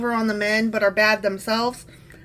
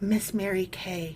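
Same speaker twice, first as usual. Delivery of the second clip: put-on breathy voice, much quieter and lower; 3 semitones lower, 8 dB quieter than usual. Mimicking how storytellers always say a woman's name, imitating a breathy voice. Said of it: "they say it with great breathy voices".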